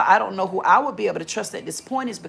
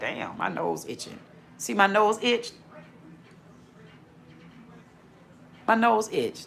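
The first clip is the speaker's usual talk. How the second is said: breathy, half-voiced, whispered delivery; 2 semitones higher, 5 dB quieter than usual. Retelling what she says when her nose itches: imitating Mecca Dream. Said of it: "When her nose be itching, she be like".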